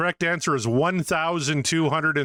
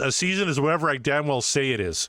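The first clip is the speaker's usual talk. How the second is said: ordinary talk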